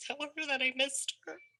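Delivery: tearful crying in a very high pitch. Recalling a wedding picture she sent to someone she missed, crying. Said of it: "I'm sorry, I'm gonna cry".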